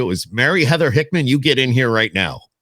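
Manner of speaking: put-on, angry, scolding voice. Speaker imagines the other speaker's parents calling their full name: imitating an angry parent. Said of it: "when your mom and dad were really pissed at you".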